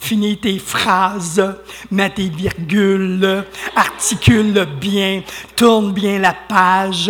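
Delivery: slow, deliberate, each phrase spoken apart.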